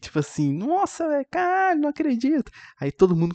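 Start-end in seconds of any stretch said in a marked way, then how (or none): 0.5-2.5 put-on, very high, shocked outcry of disbelief. Retelling a moviegoer shouting during a serious scene: imitating a shocked shout. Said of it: "começou a gritar ali".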